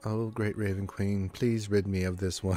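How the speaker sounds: muttered under breath, grumbling. A player's character heads down to the basement, muttering under her breath. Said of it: "muttering under, under, under her breath".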